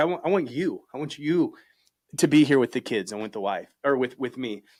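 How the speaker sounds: words coming out through tears, crying while talking. Recalling a tough talk with his wife, crying while talking. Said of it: "why am I crying?".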